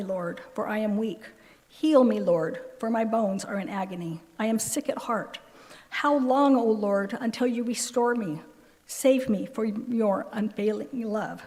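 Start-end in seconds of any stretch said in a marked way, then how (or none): none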